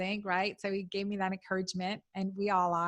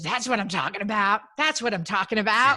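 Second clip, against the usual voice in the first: very loud, gruff, rough big-city delivery; 9 dB louder than usual. Retelling what a trainer said: imitating the trainer's rough city voice. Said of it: "in his really rough city voice".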